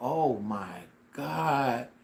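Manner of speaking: alarmed, panicked outburst. Retelling learning a root was stuck in the gum: imitating own past panic. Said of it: "Now I'm really panicking".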